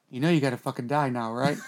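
very low, hushed, close half-whisper. Retelling leaning to a masked guy's ear at Yomicon, retelling a half-whisper. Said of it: "I went to his ear and I whispered".

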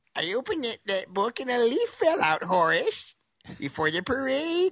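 very high voice, talking through clenched teeth. A host demonstrates how to do a Carol Channing impersonation, talking through teeth. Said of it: "try to talk through your teeth".

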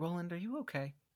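very quiet. Speaker acts out what a woman says to Roland: very quiet. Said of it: "she just says very quietly".

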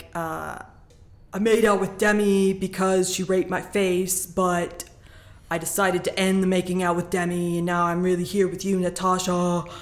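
put-on dead-souled monotone, flat and lifeless delivery. Recapping what a guy tells Natasha, imitating a dead-souled monotone. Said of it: "I like your impression of him. It's very dead. Dead in the soul".

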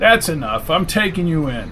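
ordinary delivery

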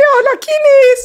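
put-on shrill, very high, loud little-girl voice. Retelling a film scene, quoting a character answering the door, imitating a girlish voice. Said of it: "Así, con esa voz".

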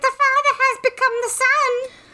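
weird, bizarre delivery in a very high pitch. Retelling a story, she hears Craig through the door, in Craig's weird high-pitched voice. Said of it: "Craig with a really weird high-pitched voice".

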